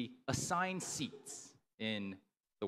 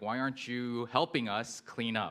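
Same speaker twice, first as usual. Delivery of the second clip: normal talking voice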